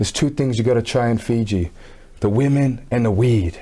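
put-on whisper. Retelling a local guy in Fiji leaning in to his ear, imitating a man whispering. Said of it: "He whispers in my ear and he's like".

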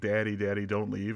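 normal talking voice

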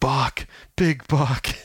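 whispered slowly. Retelling what his buddy whispered to him while helping him: retelling a whisper. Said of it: "whispers to me".

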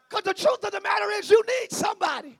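barely held-back shout, pitched very high. Preaching, holding back a yell. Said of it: "I'm trying not to yell".

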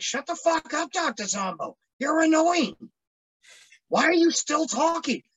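put-on high, fed-up scream full of disgust. Creator recalls watching a scrapped episode, retelling screaming at the screen. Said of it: "I was screaming at the screen".

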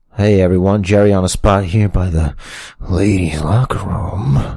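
exaggerated, put-on creepy character voice. Pitching a gimmick as a character: put-on creepy voice. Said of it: "you're the one with the better creep voice. I know".

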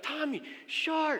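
mock, very high, shouted alarmed yell. Telling a shark story, the speaker re-enacts yelling a warning to a swimmer: retelling a yell. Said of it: "And I'm yelling".

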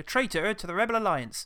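put-on West Country accent, high pitch. Asked by the other speaker for it: David Prowse voice. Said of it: "Try and do David Prowse".

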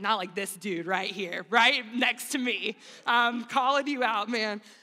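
loud, showy, acted-out praying voice. Picturing the Pharisee from the parable praying out loud: imitating loud praying. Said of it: "praying this loudly out loud".

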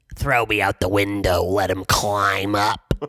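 very low animated cartoon character voice. Showing a guest the voice they did in a movie, animated hair character voice. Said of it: "Does this sound familiar to you?".

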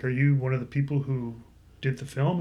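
ordinary delivery

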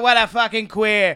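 Northeastern regional accent. Imitating the guys the speaker grew up with, in a dumb Northeastern accent. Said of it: "I do it in that dumb Northeastern accent".

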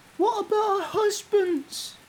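very high, slow woman's voice. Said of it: "a voice like a female saying".

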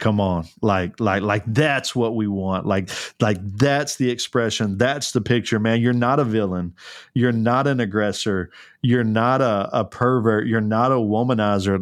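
ordinary talk, nothing marked

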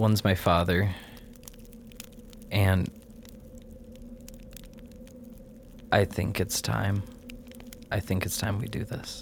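soft, breathy, whispered weeping voice. In a role-play scene, speaking a character's line in a very crying voice. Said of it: "A very crying voice".

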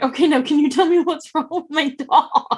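acted, almost crying. Retelling how she asked what was wrong with her dog, retelling being near tears. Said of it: "I almost broke down in tears going".

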